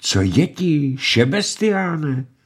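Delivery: alarmed, high, horrified cry. Milady cries out to the lord staring at the yellowed paper; horrified exclamation. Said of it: "Zvolala milady zděšeně".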